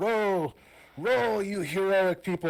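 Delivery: very high, loud, bellowed shouting. Voicing a character ordering the rowers to row: Argus shouting orders. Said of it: "Argus is gonna shout for the rowers".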